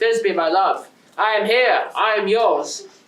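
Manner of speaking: deep strong heroic voice. Showing the others the voice of Pyramus: Pyramus voice, deep and strong. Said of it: "For this voice, I would be Pyramus, deep and strong".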